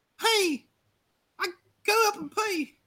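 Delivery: squeaky, drawn-out, very high, slow voice. Imitating a chat viewer who typed the answer first: imitating LaCandace. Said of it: "[name]'s the one doing the impression".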